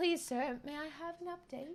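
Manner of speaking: soft, laid-on, put-on British accent. Recounting what the live studio audience said: put-on British voice. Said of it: "in our best British voice".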